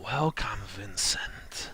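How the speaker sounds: eerie priest voice with sibilant, creepy hissing. A priest turns and greets an approaching visitor, sibilant, creepy voice. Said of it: "He speaks in a sibilant, creepy voice".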